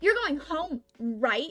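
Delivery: loud, pushy, aggressive, confrontational voice. Retelling what a coworker said when coming into the back: imitating an aggressive coworker. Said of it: "all more aggressive than that".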